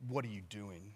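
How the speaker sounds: very hushed, judging, disapproving tone. Retelling a son catching someone eating in the kitchen: imitating son's disapproval. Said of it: "this look of disapproval".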